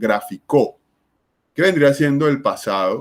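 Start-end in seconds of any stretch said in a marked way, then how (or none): 0.0-0.8 gráfico with the final syllable -co stressed, said grafiCO. Showing how gráfico sounds if stressed at the end: stress on last syllable co. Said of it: "Si fuera la última sílaba, la palabra sonaría".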